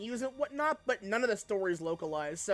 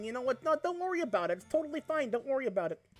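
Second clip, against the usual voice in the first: slight Milwaukee twang, pitched up; 5 semitones higher than usual. Talking about switching between accents, the speaker slips into a slight Milwaukee accent. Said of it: "a little Milwaukeean".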